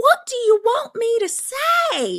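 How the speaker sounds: very high, sugary, sweet, put-on Southern drawl. Mocking a woman's answers about her baby, imitating a sweet Southern drawl. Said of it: "She's Southern".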